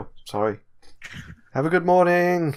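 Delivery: very high, sheepish, apologetic voice. Voicing the robed traveler after his companion shoves him: apologetic traveler voice. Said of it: "The other one shoves him a little bit. He's like".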